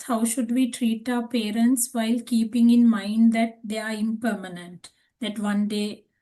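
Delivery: ordinary talk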